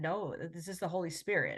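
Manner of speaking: mock speaking through tears, tearful. Retelling a friend's answer given in tears in church: imitating someone speaking in tears. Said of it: "in tears and just said".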